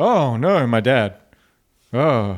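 mock tearful overacting, about to cry. Retelling a scene where a daughter hears her father died: imitating a bad actress about to cry. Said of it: "And she's about to cry".

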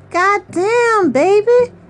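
playful, teasing, joking tone, very high voice. A narrator reads Billy answering Earl; joking. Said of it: "Billy replied jokingly".

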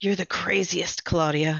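muttered, mumbled under the breath. A man speaking to Claudia as she embraces him, muttered. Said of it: "he muttered".

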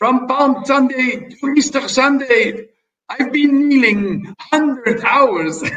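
put-on high French accent. Quoting a letter written home from the court of Leopold I, put-on French accent. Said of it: "I'm making this with a French accent".

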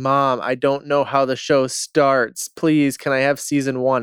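mock tearful, crying plea. Retelling a plea to Mom: imitating own past crying. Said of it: "crying 'cause I was like".

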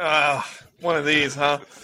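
put-on groaning. Retelling how the group reacted while watching: imitating a groan.

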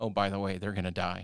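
plain

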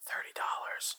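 hushed voice. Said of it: "I was whispering".

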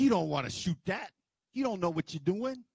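mock menacing threatening man voice. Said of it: "And he's like".

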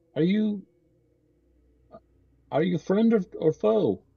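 woman's voice calling out. Narrating the approach to a tower, the storyteller voices a woman's voice calling down. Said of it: "a woman's voice calling down and saying".

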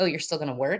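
plain

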